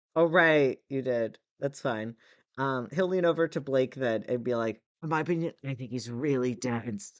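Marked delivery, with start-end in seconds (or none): 5.0-7.2 loud stage whisper. Voicing a character leaning over to Blake: loud stage whisper. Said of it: "He's doing that really loud whisper again".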